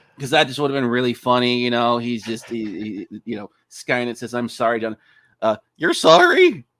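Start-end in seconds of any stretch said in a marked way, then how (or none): 5.4-6.5 silly goofy cartoon voice with swooping pitch. Mocking a bad dub where Skynet speaks this line: Goofy-like voice. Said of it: "it sounds like Goofy or whatever".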